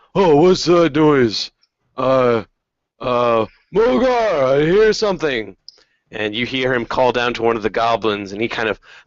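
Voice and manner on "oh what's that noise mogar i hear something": high, slow, drawn-out half-ogre voice. Voicing a half-ogre who hears a noise: half-ogre voice. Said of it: "the half-ogre, he kind of, like, looks up".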